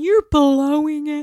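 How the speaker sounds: very high, loud, shrill yelling. Describing a wife yelling at her husband, the speaker retells her yell. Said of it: "She's yelling at him".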